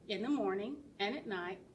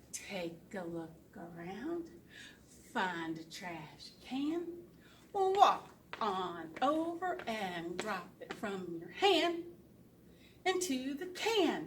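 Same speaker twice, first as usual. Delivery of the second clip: say-along rhyme delivery. Leading children to say a trash poem along: very slow. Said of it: "I'll go really slow".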